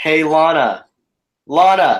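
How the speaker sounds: loud, carrying calling-out voice. Trying out a baby name by calling it across the backyard: yelling a name across a backyard. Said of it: "go in your backyard and yell".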